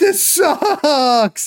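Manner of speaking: very high, sobbing crying voice. Retelling a scene where she is pulled by chains, imitating Ashley crying. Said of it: "she's crying".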